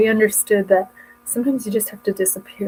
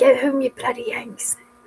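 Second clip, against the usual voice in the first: broad, thick put-on Cockney accent; 3 semitones higher than usual. Retelling how dad heckled American soldiers, thick Cockney accent. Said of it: "in a thick Cockney accent or Mockney accent".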